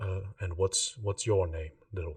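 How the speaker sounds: big voice eased into gentle kindness. Voicing a guard squatting down to a child: softened guard voice. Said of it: "his voice kinda softens and he says".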